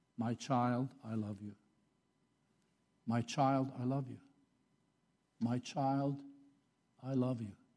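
mock tender, loving, caring, steady, even voice. Quoting what God keeps saying to his child, God's loving, caring voice, retold. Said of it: "in a loving, caring, even voice".

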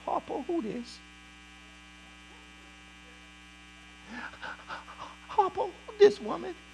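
breathy, hushed, half-whispered character voice. Retelling a Bible scene, a line in Squeak voice from Color Purple. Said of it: "in the voice of Squeak from Color Purple".

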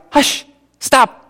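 put-on exasperated, fed-up tone. Retelling Moses whacking the rock: frustrated Moses voice. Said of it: "He's frustrated".

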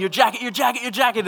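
put-on shouting. Recounting a gasoline fire that set his jacket alight, retelling a yell. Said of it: "I'm yelling".

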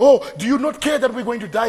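put-on frantic voice. Retelling the boat in the storm, imitating a panicking voice.

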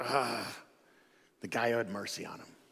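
put-on grudging, through gritted teeth. Retelling the law expert's reply to Jesus, through gritted teeth. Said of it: "just gritting his teeth".

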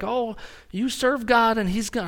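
put-on high Texan TV preacher accent. Mocking TV preachers of the prosperity gospel, Texas TV preacher accent. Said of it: "I do a Texas accent every time I do a TV preacher".

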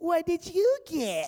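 very slow, high-pitched, whiny drawl. Mimicking people at school asking what you got, imitating a whiny voice. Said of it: "they would always say with this whiny voice".

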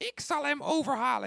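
eerie, airy, whispered put-on ghostly spirit voice. As if you're a restless spirit drifting up to a great ruler, offering a sly plan in a hollow, otherworldly murmur. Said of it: "een beetje zo'n geestenstem".

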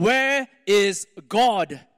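severe, demanding tone. A pastor repeats his question to a stunned boy, sternly. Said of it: "the man said sternly".

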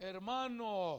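deep, booming, very loud delivery. Retelling a phone call, speaker quotes the pastor's greeting, imitating Pastor Elias's deep voice. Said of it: "He's a real deep voice".

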